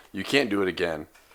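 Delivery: normal talking voice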